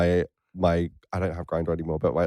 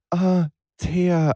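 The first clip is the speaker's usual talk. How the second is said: airy, breathy, very high voice; 12 semitones higher, 3 dB louder than usual. Recounting how a person called out the speaker's name, in a breathy voice. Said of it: "in a breathy voice".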